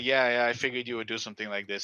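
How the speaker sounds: put-on taunting tone. Retelling a character taunting Rocket after a shooting: imitating a taunt. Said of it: "and then he starts taunting him".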